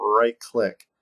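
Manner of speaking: "right" drawn out long and slow. Giving software steps, saying it so you don't click the wrong button: elongated 'right click'. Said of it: "I'll elongate it".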